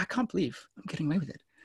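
put-on laughing through words. A speaker acts out someone sneaking a one-minute sit-down; acting out laughing while talking. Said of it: "You're just laughing".

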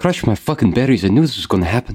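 muttered whisper under the breath. Voicing Red Claw muttering at the shared meal: whispering under his breath. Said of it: "whispers under his voice".

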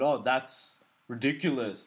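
crude, stupid put-on caricature Indian accent. Retelling how guys on the street repeated his words: stupid caricature Indian accent. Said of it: "a stupid caricature of an Indian accent".

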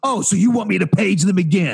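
mock combative, in-your-face, challenging, confrontational tone. Retelling a clerk getting in the speaker's face: imitating a confrontational clerk. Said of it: "And she says it like that".

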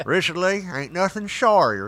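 talking with a snuff dip in the lip. Retelling the grandmother's warning, imitating grandma talking with snuff in mouth. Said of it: "She always talked like this 'cause she had a dip of snuff in her mouth".

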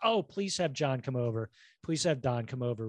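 ordinary delivery

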